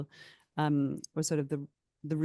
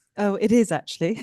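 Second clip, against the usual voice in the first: speaking through a laugh, louder and higher-pitched; 5 semitones higher, 6 dB louder than usual. Answering a question about a book's themes, laughing.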